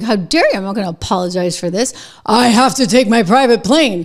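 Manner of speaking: acted-out, fast, mad, indignant rant. Retelling how Bernie Sanders answered a Fox News anchor: mock-angry Bernie Sanders impression. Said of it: "he gets like mad about it".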